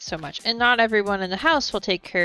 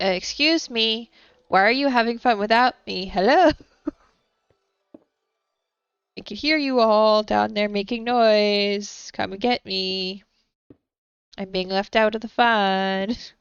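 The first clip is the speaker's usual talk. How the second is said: calling out, put-upon, feeling left out; 2 semitones higher than usual. Retelling how Lucy reacts when left too long: imitating Lucy left out. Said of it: "she's like".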